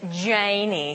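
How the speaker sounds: slow, drawn-out Tennessee drawl.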